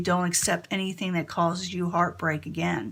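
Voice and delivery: ordinary talk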